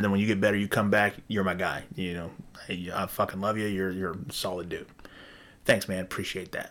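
ordinary talk

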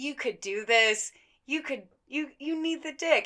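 mock yelled, insistent, urgent screaming. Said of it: "She is screaming".

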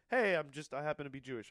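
normal talking voice

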